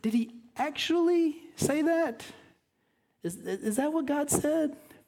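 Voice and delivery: sarcastic serpent voice. Acting out the serpent's line to the woman: imitating a sarcastic serpent. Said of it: "the sarcasm in the voice".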